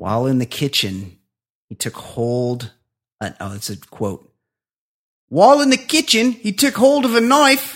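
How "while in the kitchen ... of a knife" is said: Aussie accent, very loud and very high. Reading a news story quote aloud, in an accidental aussie accent. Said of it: "Wait, no, that's Aussie".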